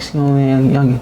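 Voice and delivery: put-on condescending, talking-down tone, as if to a child. Retelling how the grown opponent spoke to him: imitating talking down to a kid. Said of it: "he talking to me like a kid".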